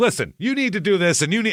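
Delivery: mock exasperated dad yell. Retelling how the oldest kid yells at siblings on a road trip: imitating a fed-up dad yelling. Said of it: "he sounds just like a thirty-five-year-old dad who has had enough".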